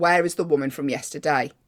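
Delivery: normal talking voice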